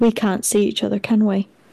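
hushed, very quiet voice. In a role-play scene, a character tries again to reach the others: talking very quietly. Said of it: "talking very quietly".

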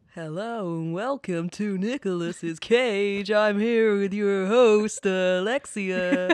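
loud radio DJ announcer voice. Opening the show and introducing the host, in a radio DJ voice. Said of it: "It was my DJ voice".

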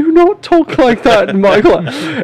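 very high, horrible, badly done put-on British accent. Retelling how the whole class repeated the teacher's scolding: horrible fake british accent. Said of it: "everybody just did our horrible British accents".

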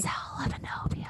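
soft, unvoiced ASMR whisper.

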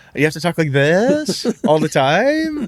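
upspeak, every phrase lifting, rising at the end. Showing how a character would have to talk: upspeak on every phrase. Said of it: "That's an upwards inflection".

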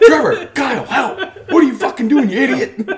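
shrill, loud, exasperated full-volume yelling. Retelling a frustrated dad while getting a Christmas tree, imitating a dad yelling. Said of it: "And then starts yelling at you".

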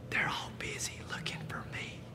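put-on very quiet, hushed small child's whisper. Telling a joke, voicing a little boy on the phone: imitating a whispering little boy. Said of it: "again with a whisper".

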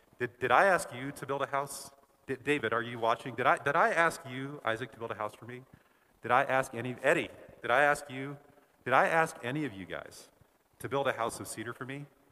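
mock dry, pointed, sarcastic delivery with heavy irony. Acting out God asking the room, kinda sarcastically. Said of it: "kinda sarcastically".

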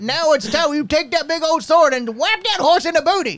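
very high, put-on old Missouri man voice. Acting out someone coaching the boys, in an old Missouri man voice. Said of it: "done by like an old man from like, I don't know, Missouri".

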